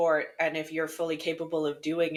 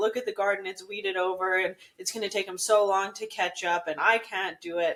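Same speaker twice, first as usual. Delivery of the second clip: tearful, weeping lament while crying; 3 semitones higher than usual. Retelling what their grandmother said, imitating someone crying. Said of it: "my Oma was like literally in tears".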